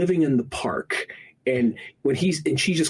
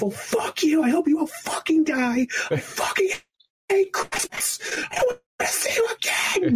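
mock, very high-pitched, escalating tantrum voice. Retelling a movie scene after a school play: imitating Kevin freaking out. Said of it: "just this whole freak out".

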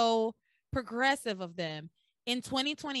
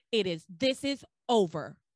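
put-on stern, firm voice; 2 semitones lower, 4 dB louder than usual.

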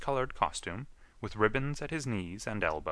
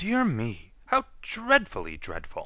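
dainty, loud, drawn-out gasping; 3 semitones higher, 5 dB louder than usual. As the roses tremble, a moss rose speaks, gasping. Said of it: "A dainty moss rose gasped".

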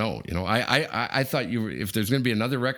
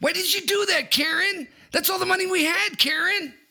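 put-on impression voice, very high pitched, rough on throat. Trying the same impression after the co-host: Ray Liotta impression. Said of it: "mine might be better".

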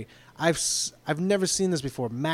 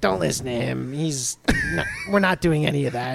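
slow, swooping, sing-song, stretched-out delivery. Retelling what a trainee said to someone else: imitating Crotch. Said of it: "and Crotch goes".

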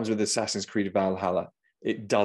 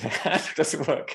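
acted alarmed, high-pitched, panicky blurt; 8 semitones higher than usual. Speaker retells being stuck in a car whose handle won't work; retelling own panic. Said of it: "I'm panicking".

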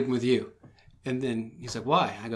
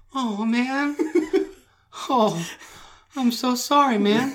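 put-on very high, pitiful, sad puppy-dog voice; 12 semitones higher, 6 dB louder than usual. Retelling how the listener apologized after peeing on him, mock sad puppy-dog apology. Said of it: "you get all sad, sad puppy dog like".

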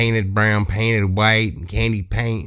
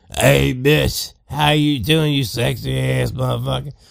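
put-on drunk voice, slower pace; 4 semitones higher than usual. Telling a story of Kev arriving at the bar, imitating drunk Kev. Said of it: "He's just twisted".

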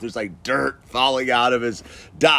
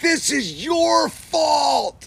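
mock screaming, much higher pitch. Retelling how a dust-covered man pointed at him, the speaker imitates screaming. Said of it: "He's screaming".

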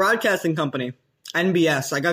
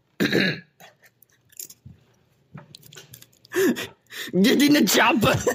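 drawn out slowly at high pitch; 8 semitones higher than usual. Told to do another impression, the speaker does his Domingo Pepperoni impression. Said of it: "This is my my Domingo Pepperoni impression".

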